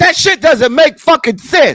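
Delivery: very high-pitched, shrill, loud yelling. Complaining about a hookah bill during an argument, yelling. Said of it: "Who are you yelling at?".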